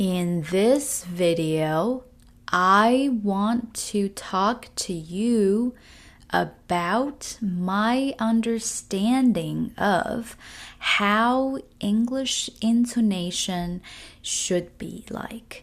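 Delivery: very slow, deliberate, every word drawn out. Demonstrating intonation practice on an English sentence, very slow and deliberate. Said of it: "do it very slowly. Do it so slow that you almost feel embarrassed".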